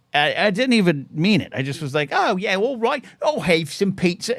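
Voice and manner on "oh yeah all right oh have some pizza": terrible put-on British accent, pitched up. Speaker recreating replying as a child to a british guy taking his order, bad british accent. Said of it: "the worst accent in the world, even worse than what I did now".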